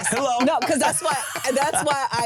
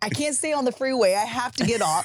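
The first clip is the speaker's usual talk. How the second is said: ordinary delivery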